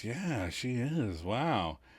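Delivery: put-on drowsy, half-asleep murmur, soft and sleepy. Retelling what Joey said half asleep in the waiting room, imitating Joey's sleepy voice. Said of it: "in his sleepy voice".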